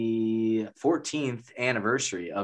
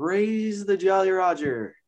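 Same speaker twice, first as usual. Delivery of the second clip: very high, stretched, drawn-out announcer call; 9 semitones higher, 3 dB louder than usual. Naming a favorite home run call, imitating the Pirates announcer's home run call. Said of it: "the Pirates announcer where he's like".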